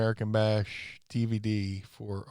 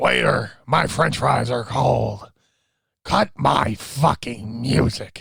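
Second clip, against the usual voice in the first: very loud, rough, creaky fart-like rasp; 2 semitones higher, 10 dB louder than usual. Describing a guy they nicknamed the French fries, imitating a fart-like voice. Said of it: "called it like a fart voice".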